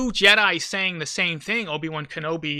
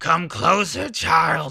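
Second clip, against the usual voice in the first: poorly done put-on old-man villain voice. Quoting Snoke while discussing Disney's Star Wars, in a Snoke impersonation. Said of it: "This is my Snoke impersonation".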